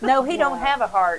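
booming, loud, shrill put-on Tennessee accent. Joking about the vampire play, making fun of own people: mocking Tennessee accent. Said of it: "I'm making fun of my own people".

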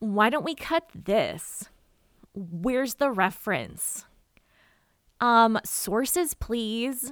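slow, the meanest voice possible. Recalling how editor's notes used to be read aloud, in a mock-mean voice. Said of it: "I read it in just the meanest voice possible".

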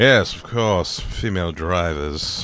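slow, proper-sounding delivery. Watching a Bond film, imitating a Bond actor: Roger Moore impression. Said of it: "When you get to Roger Moore, he's just".

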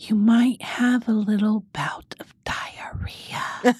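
quiet, secretive, breathy whisper. Retelling what the pharmacist said while leaning in: imitating someone whispering. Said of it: "She whispers it to me".

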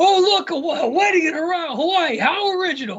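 very high, fed-up, unhinged outburst, losing it. Retelling a movie scene where a character finally loses it: imitating someone losing his temper. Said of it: "finally lost his shit".

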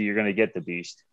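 ordinary delivery

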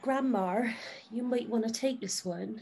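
softly spoken. Player recounting what they told grandma in the game, saying it quite quietly. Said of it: "I say quite quietly".

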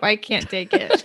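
tearful voice, speaking through tears. Speakers share the good parts of their week; one speaks while crying. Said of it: "She is crying".

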